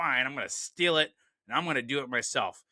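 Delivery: put-on temper tantrum. Retelling the villain's reaction to Daddy not trusting him: imitating a temper tantrum. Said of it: "he's having a temper tantrum".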